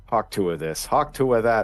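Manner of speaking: nagging grandpa impression, put-on old man voice.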